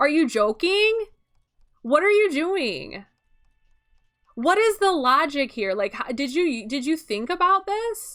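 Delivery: angry. Complaining about how a man displayed the skeleton you gave him: mad. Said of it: "I'm unnecessarily mad about this".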